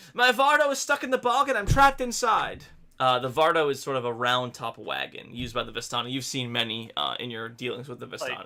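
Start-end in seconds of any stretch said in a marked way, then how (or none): 0.2-2.7 very high, panicked, frantic calling voice. Voicing a trapped character calling out from a stuck wagon: frantic calling for help. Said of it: "a frantic voice calls from within".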